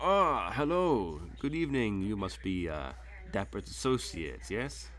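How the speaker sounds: cheery, welcoming, jovial host voice. Voicing the host who opens the mansion door: jovial Middle Eastern host voice. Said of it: "he opens the door and he's like".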